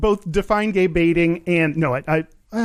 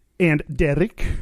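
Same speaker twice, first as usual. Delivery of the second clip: put-on Spanish accent. Reading the next supporter's name, staying in a put-on Spanish accent. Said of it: "I'm already in the accent".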